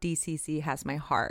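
ordinary talk, nothing marked

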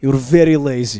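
loud, heavily laid-on mock Russian accent.

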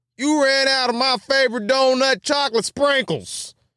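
put-on country accent, pitched very high. Voicing the Dunkin' Donuts customer from a news story, in a put-on country accent. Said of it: "Why did I add a country accent to that?".

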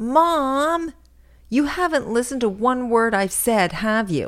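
shrill screech, drawn out. Mother retells what her daughter screeched at her, imitating the screech. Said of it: "My daughter screeched".

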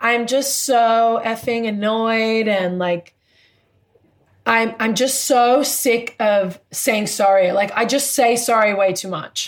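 ordinary talk

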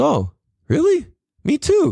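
put-on thick Spanish accent, very high, drawn out, slow. Speaker retells a friend in Peru answering him: imitating David's heavy accent. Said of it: "In a heavy ass accent".

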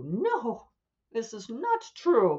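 mock prim, affronted, huffy indignation, loud and high. Mimicking writers who object to this point, in a mock-huffy writer voice. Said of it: "writers who will get very huffy about this and go".

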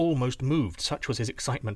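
plain

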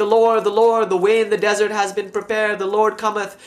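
put-on, high, mild, rapturous, lifted, held-in cry. Retelling an ecstatic experience in a cloister cell: imitating Nicephorus screaming. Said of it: "he's screaming in the cell of his cloister".

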